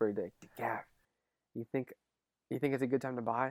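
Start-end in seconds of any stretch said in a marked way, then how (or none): 1.5-3.5 put-on, imitated whisper, quieter. Retelling how a roommate asked about buying a car: imitating Nando whispering. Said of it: "he would whisper".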